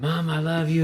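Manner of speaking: mock teary blubbering, crying, sobbing voice. Retelling the son coming out of wisdom teeth surgery: imitating someone crying. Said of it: "He's crying".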